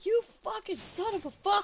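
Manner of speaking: very loud, very high, shrill, drawn-out rage scream. Imitating another speaker who starts screaming during games: imitating someone screaming. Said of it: "all of a sudden he starts screaming".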